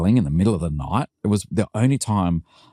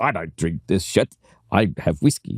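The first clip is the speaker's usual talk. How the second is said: put-on fierce, ferocious, hard-edged South African accent. Quoting a man remembered from a visit, ferocious South African accent. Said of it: "a ferocious South African accent".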